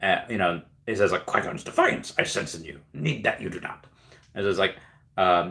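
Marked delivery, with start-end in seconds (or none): 1.2-3.8 breathy, whispered character voice, breathed out. Retelling a movie scene after a viewer praised the impression: Yoda voice. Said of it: "I did a really good Yoda impression".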